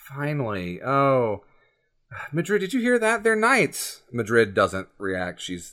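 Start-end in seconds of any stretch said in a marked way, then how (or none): 0.2-4.0 animated character voice, high, with wide swooping pitch. Game master voices a father greeting his daughter and her companions: Garrick's voice. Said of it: "Garrick, [name]'s father".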